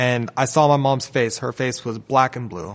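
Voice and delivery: ordinary talk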